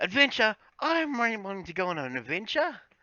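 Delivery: tiny, very high, sing-song gnome voice. Player describing a gnome calling out in the background, little gnome voice. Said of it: "hear a little voice in the background go".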